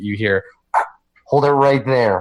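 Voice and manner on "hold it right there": altered, masked, muffled voice-changer voice. Playing a figure who speaks as the players come in, in a muffled voice-changer voice. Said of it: "his voice is muffled. He's got like a voice changer thing on".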